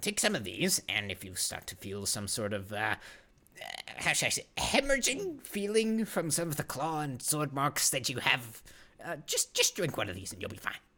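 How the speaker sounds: fussy halfling physician, stammering and tripping on words.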